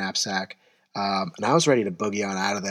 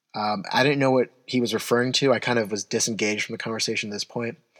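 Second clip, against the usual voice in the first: plain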